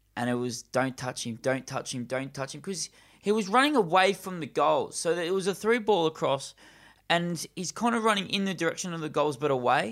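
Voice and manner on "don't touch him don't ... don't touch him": ordinary talk, nothing marked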